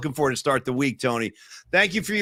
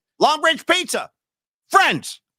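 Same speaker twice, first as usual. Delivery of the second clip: shrill, very high, loud put-on voice; 11 semitones higher, 5 dB louder than usual. Performing a viewer's message on request: Russo voice. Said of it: "in the Russo voice".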